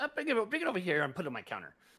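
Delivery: loud, high gnome voice with pitch swooping around. Voicing a gnome shopkeeper greeting returning customers: Tizik the gnome voice. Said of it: "He goes".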